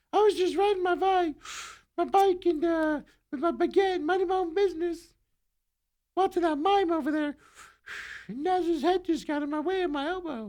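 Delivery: put-on French accent, very high. Switching into a stereotyped french character, in a higher-pitched french accent. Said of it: "French have a higher voice".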